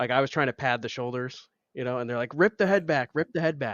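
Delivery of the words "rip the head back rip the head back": play-acted urgent, repeated barking yell, pitched up. Retelling the medic's order on the way to the hospital: imitating the medic yelling. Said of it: "I remember the medic, like, yelling".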